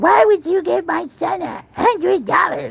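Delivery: very high-pitched, furious, angry yelling. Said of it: "she's yelling through the s-, damn speaker".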